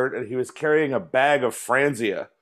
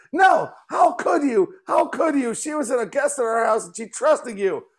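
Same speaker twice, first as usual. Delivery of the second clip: mock, very high, shrill, furious, angry scolding yell; 10 semitones higher than usual. Retelling his wife confronting him, acting out her words with mock-furious yelling. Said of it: "my wife is super pissed at me".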